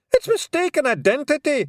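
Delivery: very high, shrill yell. Rob Anybody, hearing a list of charges read out, shouts back: shouting. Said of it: "shouted Rob Anybody".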